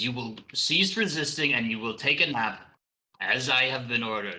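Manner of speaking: loud devil voice. Game master voicing a devil character to the players, loud voice. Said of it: "he says in a loud voice".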